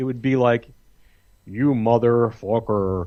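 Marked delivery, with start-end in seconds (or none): 1.5-3.1 bad put-on American accent from an English speaker. Retelling how english friends tried a fake american accent: imitating a bad american accent. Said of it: "every time they would do the American accent".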